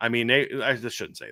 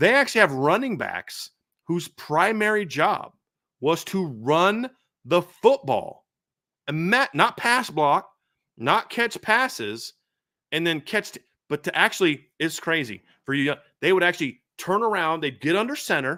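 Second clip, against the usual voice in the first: thickly sarcastic, heavy sarcasm, pitched up; 5 semitones higher than usual. Explaining how old football teams played, very sarcastic. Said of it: "I'm being very sarcastic".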